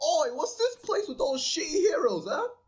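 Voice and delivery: very high, shrill, rude Cockney British accent. Describing a voice as rude rather than respectable, then doing it: rude cockney accent. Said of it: "really rude like uh, Cockney British accents".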